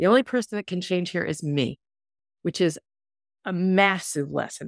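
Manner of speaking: teary, choked-up voice catching with tears. Speaker reflecting on accepting her mother as she is, getting teary. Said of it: "I'm getting teary here".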